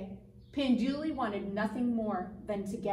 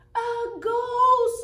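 shrill shriek, very high and very loud; 13 semitones higher, 11 dB louder than usual. The animals turn and see Pinduli coming: screaming. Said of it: "the animals screamed".

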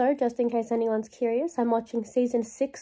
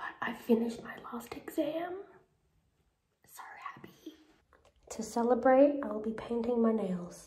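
noticeably quieter hushed voice; 5 dB quieter than usual. Late at night, a vlogger who just finished her last exam, talking quietly. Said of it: "I have to talk quietly because it's late".

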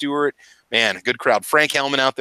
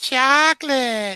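very high-pitched voice; 12 semitones higher than usual. Greeting a viewer who has just arrived: Mister Knives impersonation. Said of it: "That's my Mister Knives impersonation".

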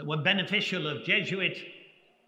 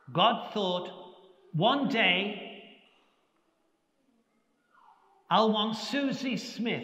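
very slow speech with higher pitch; 3 semitones higher than usual. Recalling a sister teaching young children on the floor, quote her speaking very slowly. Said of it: "speaking very slowly".

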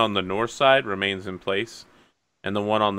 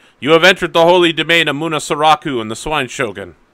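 hobgoblin voice, higher and louder; 7 semitones higher, 10 dB louder than usual. Voicing a hobgoblin ordering the party to stay put: hobgoblin voice. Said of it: "the hobgoblin on the south side is like".

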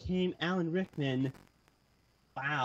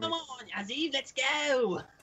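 bad, high mock cockney accent.

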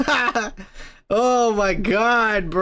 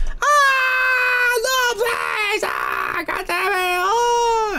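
mock very high, slow, swooping, drawn-out scream; 13 semitones higher than usual. Imagining what a woman in a scene said: imitating a woman screaming. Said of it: "That chick is screaming".

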